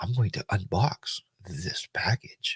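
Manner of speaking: very soft, hushed, breathy, mellow voice. Retelling how a woman talks while unboxing a package: real mellow voice. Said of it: "kind of like real mellow".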